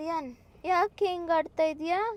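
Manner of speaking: put-on loud, high-pitched baby talk.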